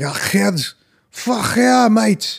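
strong put-on Scouse accent, very high and slow. Imitating a friend from Liverpool on FaceTime: imitating a Liverpool accent. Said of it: "super fucking Liverpool".

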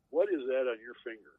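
mock scolding tone like an old woman. Retelling a woman who noticed his finger tattoo, imitating grandma's scolding tone. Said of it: "in the same like tone as my grandma would say to me when".

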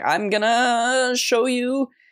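put-on high, very slow, breathy nervous voice. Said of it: "you can even hear it in her voice".

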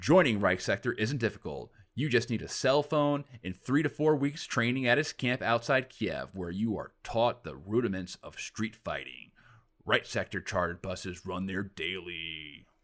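drawn-out advert voice-over promo read. Reading a news article aloud as if it were a promo, read like a promo. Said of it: "I'm going to read this like a promo".

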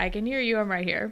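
ordinary talk

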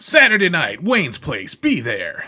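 very loud, booming announcer voice, swooping pitch. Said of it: "That was a great voice there".

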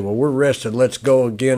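ordinary delivery

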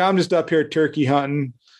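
ordinary talk

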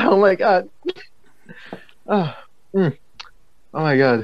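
high-pitched giggles broken by choking. While eating spicy snacks in class, the speaker is choking while giggling. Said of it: "simultaneously choking on on spice while giggling".

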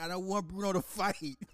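put-on very high, tearful, crying little kid voice. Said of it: "I used to cry".

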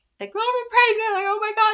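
mock very high, loud tearful sobbing through the words. Retelling the moment mom showed up hours after finding out: retelling crying. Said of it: "and I just start crying".

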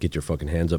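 ordinary talk

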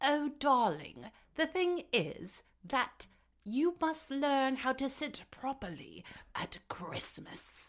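high, put-on posh aristocratic accent. Showing off impressions of a film Duchess, Margaret impression, put-on accent. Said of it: "the Duchess has an accent. I'm so good at impressions. So this is Margaret".

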